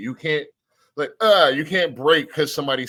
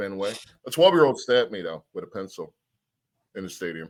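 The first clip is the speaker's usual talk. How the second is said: ordinary talk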